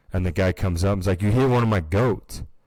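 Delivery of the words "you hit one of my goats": acted-out, upset, angry yell. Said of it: "starts yelling at him and freaking out".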